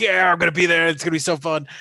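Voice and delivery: play-acted, bubbly, thrilled, super excited, eager voice. Retelling how Donald reacts to a party invitation: imitating excited Donald. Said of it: "super excited when somebody is, like, inviting him".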